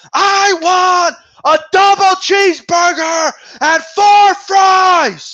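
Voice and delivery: very high, loud yell. Mocking people who yell their order at the drive-thru, imitating a yell. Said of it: "bro, you don't got to yell".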